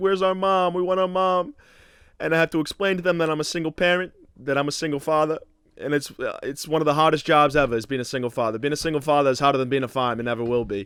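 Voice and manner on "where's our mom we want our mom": put-on high, tearful, crying children's voices, pleading. A single father retells his two boys asking for their mom, imitating crying kids. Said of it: "And they're crying".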